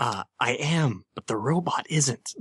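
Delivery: distorted, slowed voice. The music box on Jenny's neck is turned on for the first time: quiet distorted Jenny voice. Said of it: "in a quiet, sort of distorted voice".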